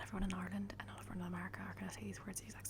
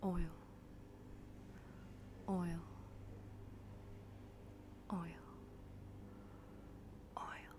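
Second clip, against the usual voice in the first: put-on Irish accent, oil said repeatedly. Demonstrating accents word by word, saying the word in an irish accent. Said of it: "Now Irish".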